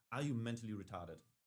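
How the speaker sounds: mock utterly solemn, grave, dead-serious tone. Retelling what the man checking the speaker asked: imitating a very serious voice. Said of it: "in the most serious voice".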